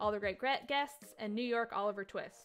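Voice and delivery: ordinary delivery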